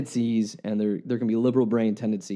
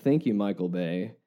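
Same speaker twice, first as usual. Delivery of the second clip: heavy, sarcastic tone; 3 semitones lower, 3 dB quieter than usual. Announcing a third Ninja Turtles movie is coming out: heavy sarcasm. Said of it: "and I mean that with heavy".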